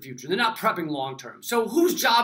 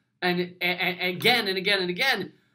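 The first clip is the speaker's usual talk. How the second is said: usual speaking voice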